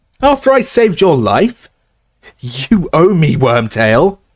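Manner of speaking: strangled, choked, strained, high and slow. Reading aloud a character pinned by the throat, pleading: choking, strangled speech. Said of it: "Harry choked".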